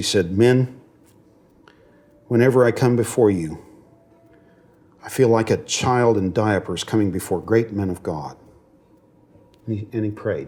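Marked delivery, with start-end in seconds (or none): 0.4-8.4 put-on, cracked, broken, choked-up voice. Quoting a man at a lectern addressing the men, in a put-on broken voice. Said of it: "In a kind of broken voice".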